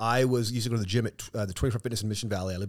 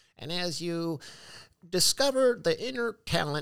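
put-on high, very slow, very drawn-out old man voice; 8 semitones higher than usual. Retelling a recording heard playing in the background, imitating an old man's voice. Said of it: "and it's an old man's voice".

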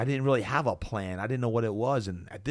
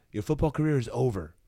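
put-on halting, very broken English with French accent; 3 semitones higher than usual. Retelling a French doctor's words: imitating a doctor's broken English. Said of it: "in very broken English".

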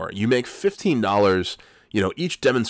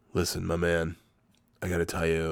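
imitated serious tone, lower and quieter; 4 semitones lower, 7 dB quieter than usual. Retelling a job interview as the interviewer gets serious: imitating someone getting serious. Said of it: "He gets real serious".

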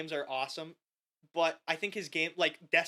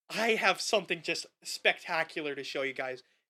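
ordinary talk

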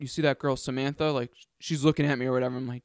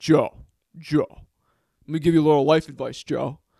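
loud, slow, pointed, deliberate, insistent delivery; 6 dB louder than usual. Retelling what a guy from weightlifting said: imitating Derek. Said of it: "he made it a point and he's like".

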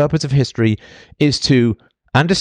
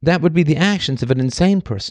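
ordinary talk

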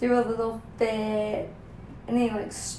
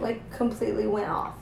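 ordinary talk

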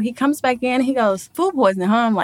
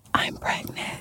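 hushed whisper, much quieter. Retelling a phone call to mom, retelling a whisper. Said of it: "I whispered it on the phone".

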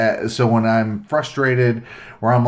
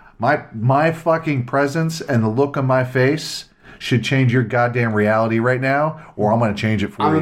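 ordinary talk

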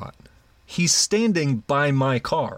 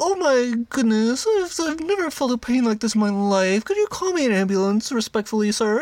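high, put-on sobbing, crying whimper; 10 semitones higher than usual. Retelling what a beaten man on the floor said: imitating someone crying. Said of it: "he's on the floor crying".

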